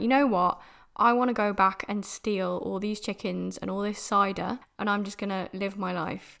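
ordinary delivery

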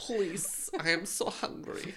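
fake Ukrainian-accented voice. Joking about accents with friends, playing Daisy in a Daisy voice, put-on Ukrainian accent. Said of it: "the accents are gonna come out".

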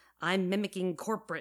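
plain reading voice

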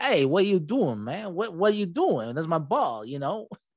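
put-on over-the-top Boston accent. Recapping a show, imitating the bowler angry that a monk grabbed his ball, stereotypical boston accent. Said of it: "speaks like one of the most stereotypical Boston".

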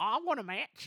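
high, put-on Australian accent. Recapping a weird backstage segment: Peyton Royce Australian accent impression. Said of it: "Was that your Australian accent? Yeah".

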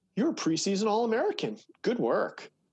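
put-on sarcastic tone. Retelling congratulating college athletes in the hallways, imitating own past kind sarcasm. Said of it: "I used to kindly go".

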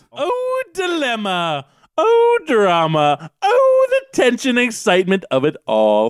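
affected, high, swooping foppish dandy voice. Voicing a character who comes out of the shadows: dandy fop character voice. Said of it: "Why am I reading him like a dandy fop?".

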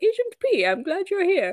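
put-on very high posh British accent. Retelling a scene where Wanda on screen greets Agent P: Wanda's posh British accent. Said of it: "she has like a posh British accent and she's like".

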